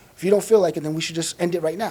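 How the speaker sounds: usual speaking voice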